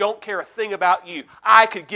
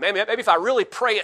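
usual speaking voice

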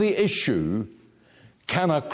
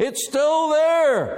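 put-on shouted out high, like a boy. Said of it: "he came down shouting".

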